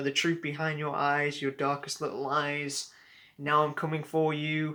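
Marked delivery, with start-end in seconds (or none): none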